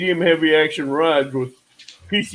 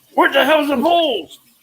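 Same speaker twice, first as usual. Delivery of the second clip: mock very high, shrill holler; 10 semitones higher than usual. Retelling how someone started yelling halfway down the river: imitating someone yelling. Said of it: "He started yelling like".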